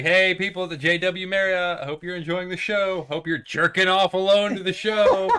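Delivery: mock light heckling shout, high. Retelling what someone shouted at people in a hotel window: imitating someone shouting. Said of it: "he just shouted out".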